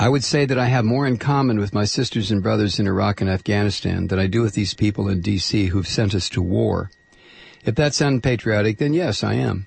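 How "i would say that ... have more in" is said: ordinary delivery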